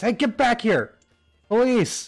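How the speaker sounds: shouting barkeep voice. Voicing the barkeep as a character runs for the back door: barkeep shouting. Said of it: "The barkeep shouts".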